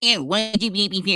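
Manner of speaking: put-on, slow, drawn-out, dopey mocking voice. Describing how he mocks people in his chat, the speaker does a stupid mocking voice. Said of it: "He always puts on a stupid voice for them".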